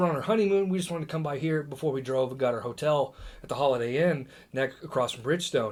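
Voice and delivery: ordinary talk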